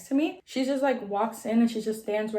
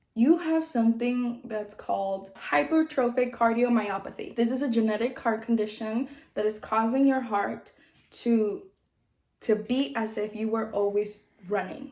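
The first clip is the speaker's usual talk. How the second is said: normal talking voice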